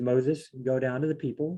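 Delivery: ordinary talk, nothing marked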